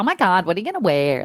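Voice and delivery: put-on, gushing mean girl voice. Describing an interview's tone, imitating a mean girlsy accent. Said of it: "a bit mean girlsy accent like you two do".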